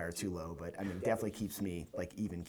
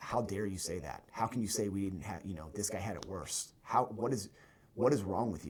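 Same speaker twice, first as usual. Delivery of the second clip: angry, outburst-like tone of voice. Retelling a unit member's challenge at a table: imitating an angry confrontation. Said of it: "was ready to fight me over it".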